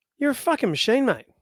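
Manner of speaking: mock admiring tone. Retelling exactly how he praised a hard-working mechanic: re-enacting his own past praise. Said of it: "That's exactly how I said it".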